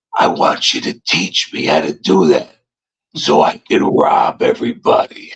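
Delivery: hushed, barely voiced whisper. Retelling what he said to the speaker, retelling a whisper. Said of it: "he's whispering".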